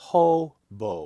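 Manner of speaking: hobo, first syllable ho strongly stressed. Explaining stress when looking for rhymes: stress on ho in hobo. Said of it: "strong, weak, that the accented syllable is the first syllable".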